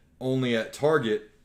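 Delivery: ordinary delivery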